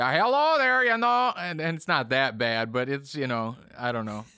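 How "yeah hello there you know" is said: put-on very high, loud Midwest grandfather voice and accent. Imitating how a grandpa talks, exaggerating it: imitating grandpa's Midwest accent. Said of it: "That's the way that he talks".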